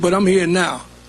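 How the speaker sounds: ordinary delivery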